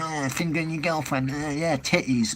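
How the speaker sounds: crude pub lad voice, under the breath. A speaker mocking the mate in the pub who always goes on, imitating him. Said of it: "that mate who's in the pub who's always like going".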